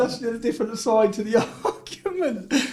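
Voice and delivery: soft laughing mid-sentence, laughing through the words.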